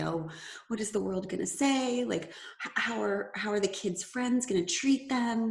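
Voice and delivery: frightened, fearful voice. Speaker quotes what she would say when they spoke: imitating a fearful voice. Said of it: "the fear in her voice".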